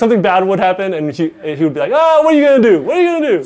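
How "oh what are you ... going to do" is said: very high, fake New Jersey accent. Retelling how a player reacted during a game, in a put-on New Jersey accent. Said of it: "he had that New Jersey accent on".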